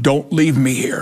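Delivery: imitated screaming. Retelling being under a kitchen table on a bad trip: retelling own screaming. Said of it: "and I'm screaming".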